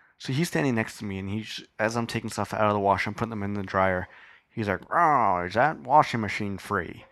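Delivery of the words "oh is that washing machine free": put-on old-time comic-strip mobster voice, drawn-out drawl. Retelling a man in the laundry room asking about the washer, 1920s Dick Tracy gangster voice. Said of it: "He sounded like a 1920 gangster from Dick Tracy".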